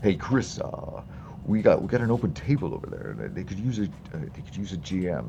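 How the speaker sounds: animated, casual, swooping voice, halting and tripping on words. Retelling how Mike would greet them at the con: impression of Mike. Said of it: "That is the best impression I've ever heard of Mike".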